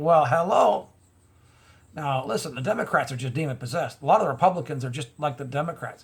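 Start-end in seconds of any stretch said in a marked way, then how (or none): none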